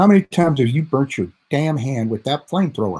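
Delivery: snide, sarcastic, swooping snark. Reading out a question Dwayne wrote, in a sarcastic, snarky Dwayne impersonation. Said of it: "I'm gonna read it in a sarcastic, snarky way that he wrote it".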